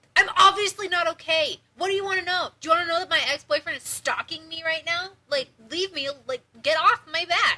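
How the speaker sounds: very loud, shrill, play-acted fed-up snapping outburst. Retelling how she snapped at a lady who kept asking: imitating herself snapping. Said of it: "And I snapped and was like".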